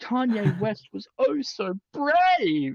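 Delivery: sarcasm laid on thick. Repeating a line after being asked for more sarcasm: more sarcastic. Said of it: "Is that sarcastic enough?".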